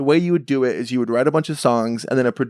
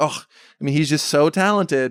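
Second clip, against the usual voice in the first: ordinary delivery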